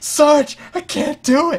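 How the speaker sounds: high, loud, panicked cry. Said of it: "they're like".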